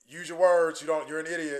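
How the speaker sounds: mock patronizing, dead-serious, condescending tone. Retelling how a worker spoke to a friend: imitating a condescending tone. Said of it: "she wasn't lo-, joking or laughing. It was like".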